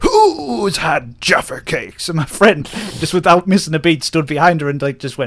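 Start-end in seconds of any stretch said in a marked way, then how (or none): 0.0-2.1 play-acted slow furious voice. Retelling how she turned to everybody after one was dropped, imitating an angry question. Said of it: "really angrily turned to everybody and went".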